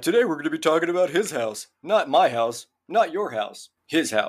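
dorky, corny delivery. Retelling the other speaker's joke from the other day: imitating Kyle's corny joke delivery. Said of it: "literally parroting the joke you did the other day".

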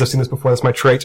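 ordinary delivery

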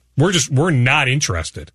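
plain

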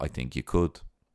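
put-on cool, calm tone. Retelling a young man's reply to a tv presenter's offer: imitating a cool calm reply. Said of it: "He's cool as a cucumber".

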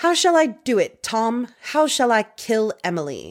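put-on storybook witch voice with a British accent. Quoting what a man asked Tom, the speaker uses a witchy British accent. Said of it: "Is that your accent?".

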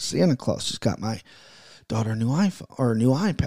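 low, hushed whisper under the breath. Parent talking so the daughter at the door won't hear, whispering. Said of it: "I got to whisper because she might be at the door".

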